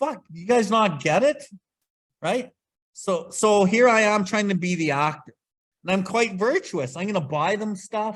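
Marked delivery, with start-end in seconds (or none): 0.0-1.4 mock exasperated, frustrated outburst. Retelling losing his mind at the kids not cleaning their bedrooms, imitating own exasperation. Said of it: "in the house losing my mind going".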